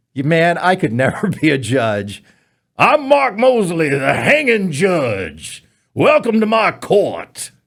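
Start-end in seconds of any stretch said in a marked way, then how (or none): 2.7-7.4 southern cartoon rooster voice, swooping up high. Playing a self-styled hanging judge: Foghorn Leghorn voice. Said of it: "Why do I sound like Foghorn Leghorn?".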